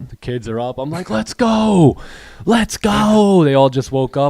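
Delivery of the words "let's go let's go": mock very high, very slow, fired-up drawn-out shout. Retelling shouting at the kids in the morning: retelling own shouting. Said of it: "I was just shouting".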